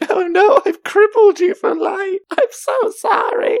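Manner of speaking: sobbing, very high-pitched crying. Retelling how Mary apologizes for tiring Mareep: Mary, mock crying. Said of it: "she gets all sad and cryy".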